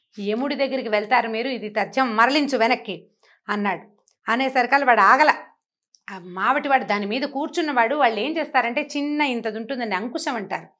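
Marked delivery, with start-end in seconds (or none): none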